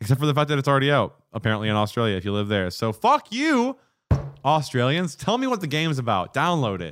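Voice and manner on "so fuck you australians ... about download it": angry, fed-up, jealous ranting. Jealous that a new game is already out in australia; angry. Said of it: "that's why I sound angry right now".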